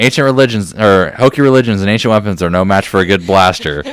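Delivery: ordinary delivery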